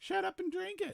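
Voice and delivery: terrible, badly done, high-pitched bear voice. Introducing himself as Winnie the Pooh: terrible Winnie the Pooh voice. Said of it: "It's terrible Winnie the Pooh".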